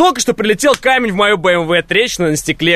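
ordinary delivery

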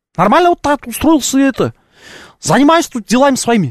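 Kazakh-accented speech. Parodying Kazakhs and Kyrgyz while speaking Russian, with a put-on Kazakh or Kyrgyz accent. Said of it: "обижу и киргизов, и казахов ... пародировать ... Вот так вот вроде похоже".

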